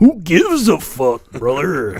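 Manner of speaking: slow, swooping, drawn-out wrestler-promo delivery. Retelling a Waffle House standoff, quoting the wrestler: Randy Savage voice. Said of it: "in Randy Savage voice".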